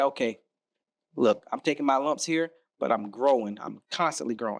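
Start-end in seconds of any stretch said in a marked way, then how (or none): none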